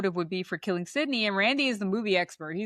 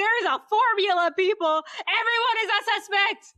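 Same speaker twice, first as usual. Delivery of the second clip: very high, shrill, frustrated screaming; 12 semitones higher, 3 dB louder than usual. Retelling a scene from the film Scream: imitating Randy screaming. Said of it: "He screams".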